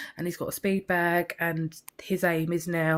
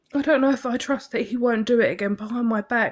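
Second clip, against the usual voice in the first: emotional, upset voice, pitched up; 5 semitones higher, 4 dB louder than usual. Speaking about something never spoken of before, getting upset. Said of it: "sorry, I'm getting upset".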